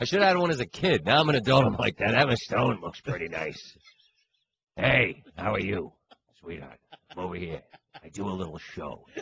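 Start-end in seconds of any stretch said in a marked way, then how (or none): 2.0-9.1 put-on very low, deep voice of a ninety-year-old. Retelling chatting up Emma Stone as an adult: Peter Falk impression. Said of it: "suddenly I turned into, like, Peter Falk".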